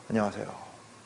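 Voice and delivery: put-on vacant, unfocused voice, low and soft.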